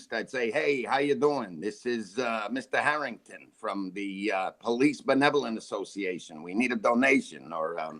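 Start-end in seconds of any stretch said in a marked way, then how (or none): 0.5-7.5 put-on back-east American accent. Retelling doing accents on phone calls, in an East Coast American accent. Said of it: "if I was calling back east".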